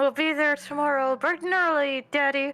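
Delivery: jaw-locked speech through clenched, gritted teeth. Answering a parent in character: talking through clenched teeth. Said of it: "And I am talking through my teeth".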